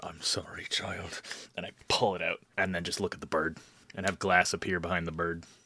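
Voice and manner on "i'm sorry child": whisper, much quieter and slower. After running him through with the blade, whispering into his ear. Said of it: "just whisper into his ear".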